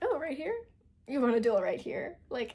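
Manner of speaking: mock tickled, eager to fight, swooping sing-song. Retelling a book scene, voicing a character's reply: imitating an amused character.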